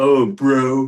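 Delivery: teasing, mocking jeer, high and loud. Retelling how their dad made fun of them for saying bro, retold mocking tone. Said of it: "making fun of us".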